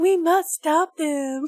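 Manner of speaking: slow, drawn-out, mocking, teasing delivery. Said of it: "like you're mocking someone else".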